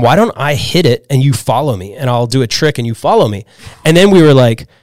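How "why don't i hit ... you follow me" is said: usual speaking voice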